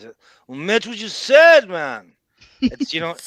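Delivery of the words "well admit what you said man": loud, slow, drawn-out belting with big pitch swoops. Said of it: "that tone has, some, I've not quite heard before the way he's".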